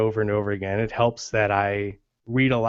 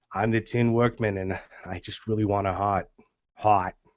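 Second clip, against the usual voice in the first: New York accent blended into a Boston accent. Showing the voice used for the Tin Man: New York-Boston accent. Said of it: "kind of New Yorker and a little bit of Bostonian".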